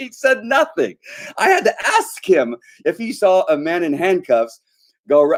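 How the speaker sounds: animated, high, drawn-out, swooping yell. Retelling a story to listeners, yelling. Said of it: "I'm sorry, I'm yelling".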